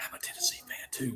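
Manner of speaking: hushed, secretive, barely voiced whisper. Retelling what other parents said at orientation: imitating someone whispering. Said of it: "people come up to me kinda whispering".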